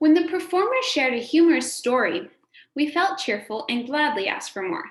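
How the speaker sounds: brief, slight pause after the word story. Reading a sentence aloud to model the comma: slight pause after 'story'. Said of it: "Notice I took a slight pause at the comma".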